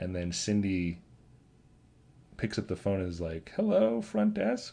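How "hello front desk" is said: very high, creaky, rasping put-on woman's voice. Retelling how Cindy picks up the phone to the front desk, in a Cindy voice. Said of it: "I don't know why I'm trying to do her voice".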